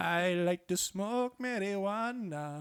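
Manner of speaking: shoddy put-on Jamaican accent, very slow. Doing the old go-to accent when pushed: bad Jamaican accent. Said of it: "shitty Jamaican".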